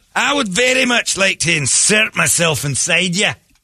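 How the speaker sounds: put-on romantic Scottish accent. Mocking the Scottish accent from a TV show: romantic Outlander Scottish accent. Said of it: "That's the romantic one".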